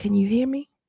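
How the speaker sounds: stage whisper, kept hushed. Retelling a talk with a woman in an abusive relationship: imitating someone half-whispering. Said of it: "the woman was whispering".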